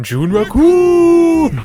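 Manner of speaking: very high, loud, drawn-out swooping cry. Joking about Seattle in June, shouting a Raccoon impression. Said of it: "That was my best Raccoon impersonation".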